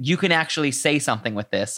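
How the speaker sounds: normal talking voice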